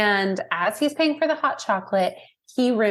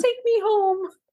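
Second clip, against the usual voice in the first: put-on pleading sad puppy voice, higher pitch; 11 semitones higher than usual. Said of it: "like a sad, lost puppy".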